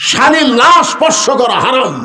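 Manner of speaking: crowd of voices shouting together.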